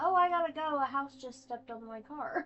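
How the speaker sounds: mock breezy, upbeat, cheerful, happy chatter. Retelling what a man says on the phone to someone, in a happy tone. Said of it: "he says it in the exact same like happy tone of voice".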